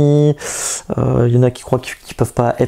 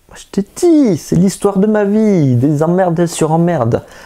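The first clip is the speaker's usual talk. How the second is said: put-on southern French accent, pitched up; 6 semitones higher than usual. Telling the troubles of their old car, in a southern French accent. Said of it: "pourquoi je prends cet accent du sud?".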